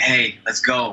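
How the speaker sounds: put-on New York accent. Retelling a voiceover audition, the speaker repeats his line in a New York accent. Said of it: "I kind of did this like New York".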